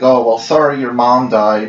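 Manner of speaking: normal talking voice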